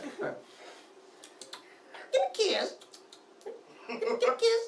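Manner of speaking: small parrot-like talking bird voice. Speaker does a quick impression for the group: parakeet impression. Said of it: "like a parakeet".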